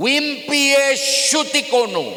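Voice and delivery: very high-pitched, loud yelling call. Retelling how someone kept shouting a name, shouted name. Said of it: "Teriaknya begini".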